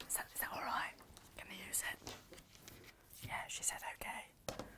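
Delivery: hushed whisper, very quiet, barely a breath. Quietly asking whether the fabric may be used: whispering. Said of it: "Don't know why I'm whispering".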